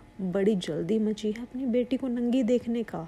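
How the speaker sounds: plain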